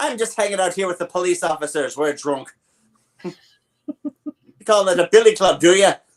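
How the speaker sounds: put-on high stage-Irish cop accent. Imitating the cops in a movie scolding someone: stereotypical irish cop accent. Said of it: "all the Irish racism, that was still all there".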